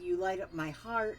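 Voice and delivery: ordinary talk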